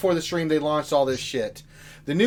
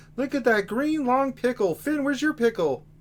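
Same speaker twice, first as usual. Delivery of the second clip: put-on puppet frog voice; 6 semitones higher, 6 dB quieter than usual. Opening the stream for chat as Kermit the Frog: Kermit the Frog voice. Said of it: "You guys are always asking for Kermit".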